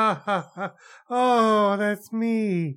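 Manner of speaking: very slow put-on voice with pleased ha-ha-ha laugh. Picturing a named filmmaker watching a movie: Tommy Wiseau impression. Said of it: "picture Tommy Wiseau watching Bratz and just going".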